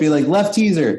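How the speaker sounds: mock yelling. Recalling calling out on the loud boat, retelling a raised voice. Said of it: "I'd raise my voice".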